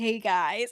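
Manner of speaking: mock completely exhausted, dead-tired, drained voice. Retelling how a friend greeted everyone on voice chat: imitating a dead-tired voice. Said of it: "she sounds so dead tired".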